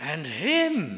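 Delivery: emphasis placed on the word "him".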